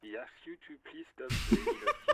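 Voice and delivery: loud, high laughing delivery.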